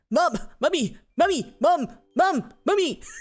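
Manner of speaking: very high, fumbled, put-on cartoon voice. Trying and failing to do a cartoon voice: failed Stewie voice. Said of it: "I can't do a Stewie voice".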